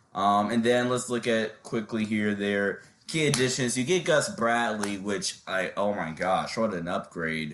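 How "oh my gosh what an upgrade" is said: extremely heavy sarcasm with fake excitement. Reviewing a team's key additions, praising a new coach: extremely sarcastic fake praise. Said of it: "I'm being extremely sarcastic there".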